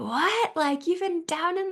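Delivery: brief, high-pitched put-on Australian accent. Retelling what strangers said when asked for a phone charger, in an Australian accent. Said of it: "I won't even try the accent for too long".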